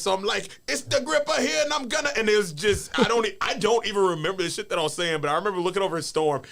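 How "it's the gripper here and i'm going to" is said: very high, really bad Jamaican accent. Retelling calling yourself The Gripper, in the worst Jamaican accent ever. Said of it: "the worst Jamaican accent you've ever heard".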